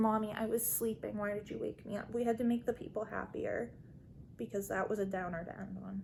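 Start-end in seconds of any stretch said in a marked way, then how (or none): 0.0-2.1 put-on pet cat voice. Speaking for the pet cat just woken up: voicing Butters the cat. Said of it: "He says".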